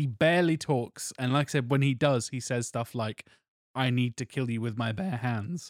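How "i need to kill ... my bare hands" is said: put-on weird sensual voice. Quoting a quiet film fighter's threat: imitating Mad Dog, weird sensual way. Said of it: "in a real weird, like, sensual way".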